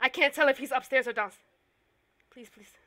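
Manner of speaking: out of breath, frightened. Hiding in a closet during a game, unsure where he is, out of breath and frightened. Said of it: "I need to get my breath".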